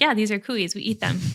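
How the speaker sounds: mock-deadpan, serious, straight-faced delivery. Retelling their partner's reply about a guinea-pig T-shirt: imitating a deadpan reply. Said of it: "he was completely deadpan".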